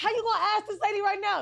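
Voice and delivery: crowd shouting over each other, high-pitched, outraged. Retelling how everybody turned on the paramedics over the lady, retelling people yelling. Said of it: "Everybody just starts yelling".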